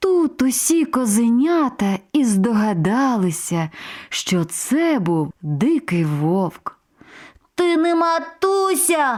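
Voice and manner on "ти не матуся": high, shouted outcry, voices crying out together. The little goats shout at the wolf outside their door, shouting. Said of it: "закричали козенята".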